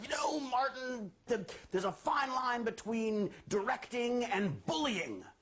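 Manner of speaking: high, slow indignant outburst. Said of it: "I blew up".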